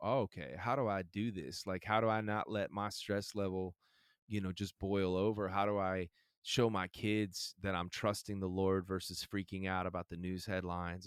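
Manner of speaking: plain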